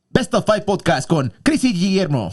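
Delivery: very high Mexican radio announcer. A podcast co-host pitches a trailer idea for the show: mexican radio voice. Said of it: "Radio voice".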